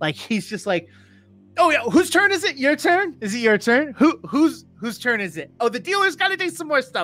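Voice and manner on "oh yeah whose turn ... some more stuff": high, loud, cocky bravado turned way up. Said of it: "that level of bravado ... turned to eleven".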